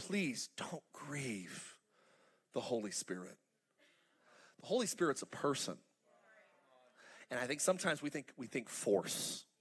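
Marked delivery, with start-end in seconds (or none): 0.0-3.4 tearful, heartfelt begging, low, slow, weeping. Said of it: "But she was saying".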